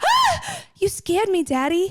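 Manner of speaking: put-on very high, swooping, babyish little-girl voice. Quoting mom in the passenger seat after the brakes were slammed, baby voice. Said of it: "She said it in a baby voice".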